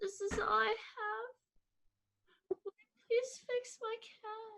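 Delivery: very high, slow, level, tearful pleading voice. Voicing a crying character begging a robot to fix her cat: crying while pleading. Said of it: "I'm going to, uh, start s-, crying".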